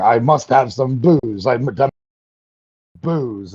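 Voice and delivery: grand theatrical declaiming, stage-actor tragedian style. Retelling a film scene where a character screams for booze: imitating a shakespearean baritone scream. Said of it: "he's screaming".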